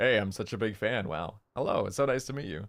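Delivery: deepened, slightly Canadian voice. Recalling talking to the other Globey members, in a deliberately deepened voice. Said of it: "I tried to like deepen my voice".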